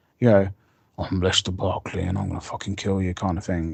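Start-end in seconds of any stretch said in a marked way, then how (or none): 1.0-3.1 put-on darker, deepened, dark villain voice. Showing the deep voice put on for Lester Barkley, Lester Barkley deep voice. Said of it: "he needed to put a deep voice on him".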